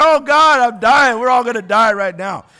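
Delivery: mock tearful blubbering, loud and wailing. Acting out a panicking feeler in a burning building: mock crying. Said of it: "just crying like".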